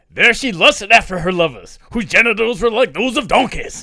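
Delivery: high, put-on Southern preacher voice. Reading a Bible verse aloud to a friend, in a Southern Baptist preacher voice. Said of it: "here comes Southern Baptist".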